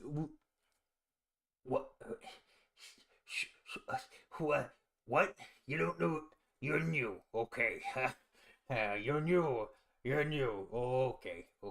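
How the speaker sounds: flustered, stammering, stumbling over words. Voicing a lizardfolk guard caught off guard: stumbling over his words. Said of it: "he sort of just, like, stumbles over his words".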